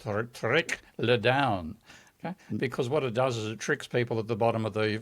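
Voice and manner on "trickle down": put-on French accent. Joking about the expression trickle down, french accent. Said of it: "Just put an extra space inside there and speak it with a French accent".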